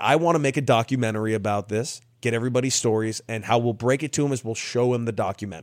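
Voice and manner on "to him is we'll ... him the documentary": ordinary talk, nothing marked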